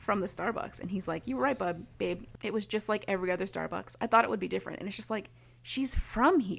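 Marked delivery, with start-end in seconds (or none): none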